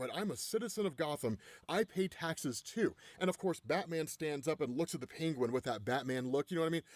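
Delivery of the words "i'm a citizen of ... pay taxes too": usual speaking voice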